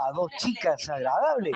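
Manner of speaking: normal talking voice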